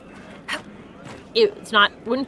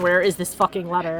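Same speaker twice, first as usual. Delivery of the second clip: ordinary delivery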